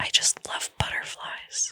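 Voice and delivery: put-on whisper. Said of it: "whispering to them".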